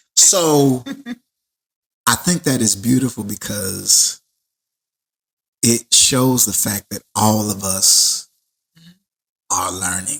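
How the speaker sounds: voice choked up, on the verge of crying. Speaker reacting to what was just said on air, about to cry. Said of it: "because I'm gonna cry".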